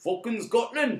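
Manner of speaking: clumsy, bad, put-on Scottish accent. Joking about Scotland after reviewing Trainspotting two: bad Scottish accent. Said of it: "that was my bad Scottish accent".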